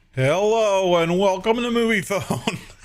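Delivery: unhurried recorded-message voice. Greet callers like the service people called to find out movie times, in a Moviefone voice. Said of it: "makes me think of that stupid movie phone thing".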